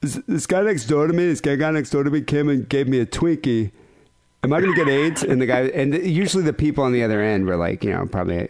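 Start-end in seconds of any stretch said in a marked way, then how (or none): 0.0-5.2 put-on dopey, dim childlike voice. Retelling prank calls to an aids hotline, in a put-on dim kid's voice.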